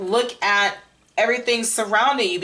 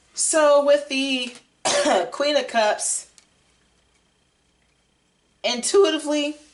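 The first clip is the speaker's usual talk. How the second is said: voice breaking mid-phrase, cracking, pitched up; 6 semitones higher than usual. Explaining the Queen of Cups card to listeners, voice cracking. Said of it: "my voice cracked".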